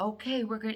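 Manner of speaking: put-on old woman whisper. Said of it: "whispering to the child".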